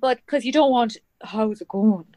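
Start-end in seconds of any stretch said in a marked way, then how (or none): 1.2-2.0 Irish accent, laid on thick, dropped low and deep. Showing the other speaker a version that is a bit much, low irish accent. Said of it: "That kind of low".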